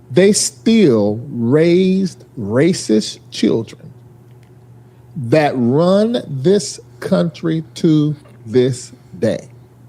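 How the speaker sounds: slow talking pace. Making a point about racism in the country: talking slowly. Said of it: "Why does he talk so slow?".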